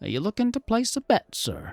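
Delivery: high, sing-song little gnome character voice. Voicing a gnome bookie greeting a player: gnome bookie voice. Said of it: "He's a little gnome guy".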